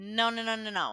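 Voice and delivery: ordinary talk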